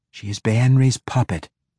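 ordinary delivery

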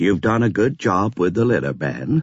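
usual speaking voice

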